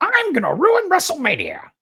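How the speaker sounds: very high, excited voice with wild pitch swoops. Talking about WrestleMania, announce your plan in an excited Paul Heyman impression. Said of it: "Why you sound like Iago from Aladdin?".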